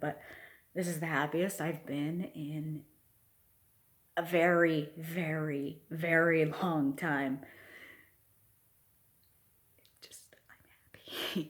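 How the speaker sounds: voice strained from holding back tears. Speaker on camera saying how happy they are, holding back tears. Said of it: "I'm trying not to cry right now".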